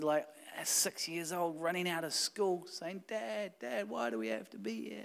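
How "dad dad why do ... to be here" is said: put-on little boy voice, soft, high, crying. Retelling his six-year-old son running out of school, imitating a crying child. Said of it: "And he's crying".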